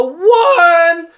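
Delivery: very high, very loud, shrill, drawn-out voice crack. Starting on something the speaker had forgotten, voice crack. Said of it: "was that a voice crack?".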